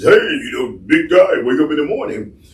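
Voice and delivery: high, bright morning radio DJ patter. Explaining what people think a radio voice is, demonstrating: radio voice. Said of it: "A radio voice is".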